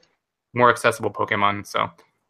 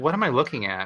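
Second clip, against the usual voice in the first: plain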